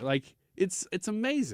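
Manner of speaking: choked-up, tearful voice, tearing up mid-sentence. Telling how a son asked why Grandma makes him feel important, tearing up. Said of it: "I'm tearing up even saying it".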